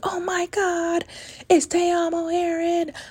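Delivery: very high, slow, drawn-out starstruck yell. Retelling what a woman yelled on camera, imitating a woman yelling. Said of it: "she's yelling".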